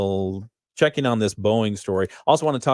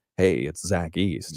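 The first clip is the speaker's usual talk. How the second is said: low, soft easy-listening radio voice; 5 semitones lower, 5 dB quieter than usual. Listing the voices Zach East does, the speaker does his easy-listening voice. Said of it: "easy listening voice".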